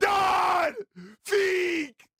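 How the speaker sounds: very high, loud, top-of-the-lungs shriek. Retelling how a man called out to him: imitating someone screaming. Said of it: "And he's like".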